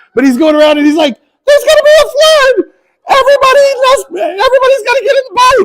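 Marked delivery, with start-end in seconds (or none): 1.5-5.7 very high, squeaky cartoon voice. Retelling the flood story, voicing Asher warning everybody, Mickey Mouse voice. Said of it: "speaks like Mickey Mouse all of a sudden".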